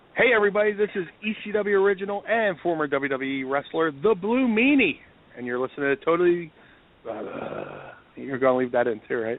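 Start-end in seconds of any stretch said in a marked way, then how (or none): 0.2-6.5 on-air station announcer delivery. A former wrestler introduces himself on a show in his radio announcer voice. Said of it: "let me get my uh, radio voice".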